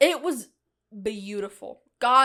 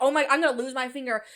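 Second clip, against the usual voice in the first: put-on panicked voice; 3 semitones higher than usual. Retelling a ring stuck on a finger: retelling own panic. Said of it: "I'm panicking".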